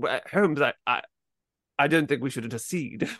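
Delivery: blustery, posh upper-class voice. Imitating a Watson line as played by James Mason: James Mason voice. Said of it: "he talked like that".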